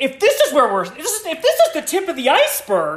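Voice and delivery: high, loud, giddy, excited voice.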